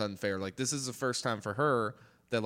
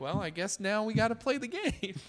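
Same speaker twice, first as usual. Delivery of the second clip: very high, breezy, unbothered, put-on offhand nonchalance; 11 semitones higher than usual. Describing a movie moment, quoting Effie's line on the train, mock-nonchalant. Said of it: "It's just like kind of nonchalantly like".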